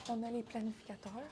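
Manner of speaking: quiet, subdued speaking.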